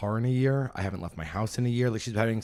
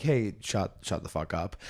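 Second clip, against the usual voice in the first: mock light, teasing, playful, jokey tone. Retelling telling chatty front-row audience members to stop talking: retelling a playful telling-off. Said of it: "in, like, a fun way".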